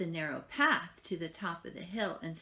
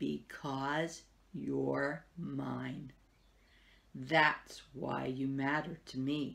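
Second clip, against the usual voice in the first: low, very slow, each word drawn out; 4 semitones lower than usual. A narrator reads a maker with his hands on a puppet's shoulders, very soft and slow. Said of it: "spoke very softly and slowly".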